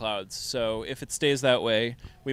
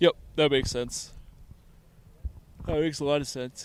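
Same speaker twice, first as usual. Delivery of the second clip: talking through yawns; 3 semitones higher than usual. Agreeing with the other speaker about heat and dehumidifying, yawning while talking. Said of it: "sorry for all the yawning".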